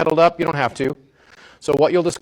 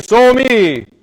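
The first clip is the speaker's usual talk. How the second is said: resonant chest voice, higher and louder; 7 semitones higher, 7 dB louder than usual. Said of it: "say it with resonance in your chest".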